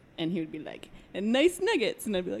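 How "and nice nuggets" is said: high cartoonish voice. Retelling what a former boss used to say: cartoonish George voice. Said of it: "in that cartoonish voice".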